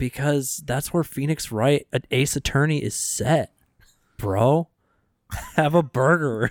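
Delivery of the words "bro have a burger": slow, drawled California surfer dude accent. Joking with friends about a game set in California, in a Californian accent. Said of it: "I'm sounding like a Californian".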